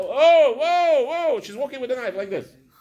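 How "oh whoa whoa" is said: sudden, very high, shrill, loud put-on scream. Retelling seeing a child carry a knife the wrong way: imitating own scream. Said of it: "I'm screaming like".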